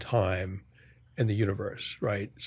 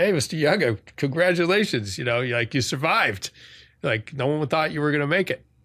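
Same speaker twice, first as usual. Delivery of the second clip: thick put-on Boston accent, pitched up; 5 semitones higher, 3 dB louder than usual. Retelling what the ICU nurse said on waking: imitating a strong Boston accent. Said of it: "pretty strong Boston accent going on".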